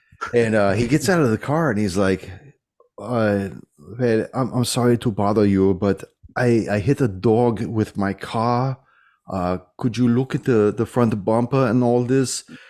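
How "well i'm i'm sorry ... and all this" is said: put-on thick German accent. Retelling a story from work, the speaker quotes an old german man, in a thick german accent. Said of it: "I got the very thick German accent".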